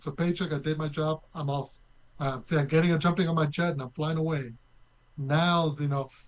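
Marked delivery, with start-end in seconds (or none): none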